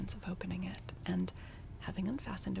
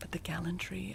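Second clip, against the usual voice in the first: ordinary delivery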